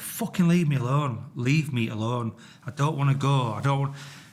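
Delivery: mock desperate, distressed shouting. Speaker retelling being asked to go, retelling shouting at steering wheel. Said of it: "I'm shouting at the steering wheel".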